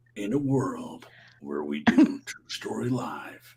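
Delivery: epic movie trailer narrator announcer voice. Prompted by another speaker to do it, saying the line in a movie trailer voice. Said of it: "you should do your movie, your uh what is it, the theater trailer? Movie trailer voice?".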